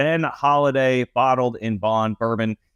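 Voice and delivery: slowed, deliberate read, each word spaced out carefully. Podcast host repeats the sponsor's product name, saying it slower. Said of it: "I'm saying it slower".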